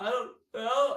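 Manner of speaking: put-on tearful voice. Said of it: "And I just start cry-".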